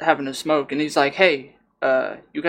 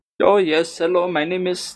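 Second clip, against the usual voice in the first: light but clear put-on Indian accent; 3 semitones higher than usual. Describing a man who came out for a smoke, imitating his Indian accent. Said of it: "he had enough of that Indian accent".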